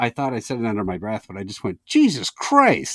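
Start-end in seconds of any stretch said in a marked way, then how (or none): 1.9-3.0 very high, jolted, startled outburst. Recounting being startled by a woman's loud remark, retelling a startled exclamation. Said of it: "I was so startled".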